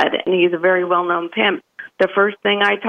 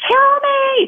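very high scream at the top of the lungs. Retelling screaming at gang members who had a gun: imitating a scream at full volume. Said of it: "screaming at the top of my lungs".

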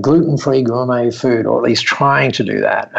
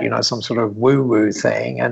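ordinary delivery

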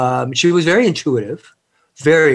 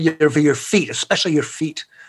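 put-on Scottish brogue. Retelling his grandmother's phone warning before a scout trip, imitating her Scottish brogue. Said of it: "in her Scottish accent, her beautiful brogue".

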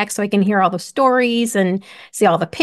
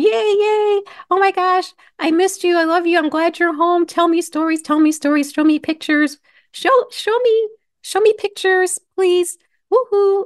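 mock overjoyed high rushed babble, yay stretched; 9 semitones higher than usual. Retelling picking up sons back from a trip: imitating own excited greeting. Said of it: "I was jumping up and down".

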